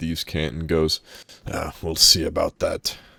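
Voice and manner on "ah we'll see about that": slow, whispered mutter beneath the breath. A character replies to a threat, whispering under his breath. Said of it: "he whispers underneath his breath".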